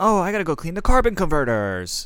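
mock whiny, put-upon, high sing-song griping. Complaining about how Luke sounded, mocking Luke's whiny voice. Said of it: "with such a whiny".

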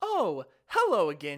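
slow, swooping, eerily friendly, creepy cheerful voice. Retelling a story, the speaker imitates a security guard greeting them with a smile. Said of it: "With that exact voice and this big smile".

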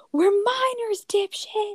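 acted-out, shrill scream, pitched very high. Recalling being whistled at while walking home with a friend, the speaker retells a scream. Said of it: "and I just screamed".

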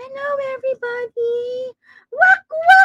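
put-on very high, pitched-way-up little-girl cartoon voice. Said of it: "I will now start talking in my Anya voice".

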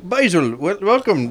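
put-on very high, shrill, poorly done Irish accent. Voicing a town mayor who greets basil by magic: bad irish accent. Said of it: "This is a fucking shitty Irish voice".

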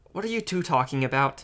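plain

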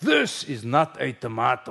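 very bad put-on Russian accent, swooping. Quoting a russian man holding up a tomato: very bad fake russian accent.

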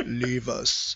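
sinister, commanding emperor-like voice. Describing how Palpatine gives commands, doing Palpatine's Emperor voice. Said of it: "he breaks out the Emperor voice".

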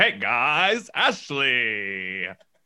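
announcer voice with the name drawn out. Imitating Mean Gene, who can't turn off his voice: Mean Gene announcer voice. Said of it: "Gene can't turn off his announcer voice either".

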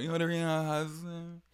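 high, slurred, drunken put-on British accent. Retelling a reality show moment, imitating Meredith slurring in a British accent. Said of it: "Slurring her shit and talking in a British accent".

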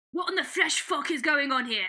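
put-on British accent, not Scottish. Inventing a swear line for a book character: put-on british accent. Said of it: "That was British. That wasn't Scottish".

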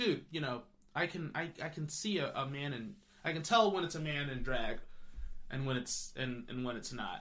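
ordinary talk, nothing marked

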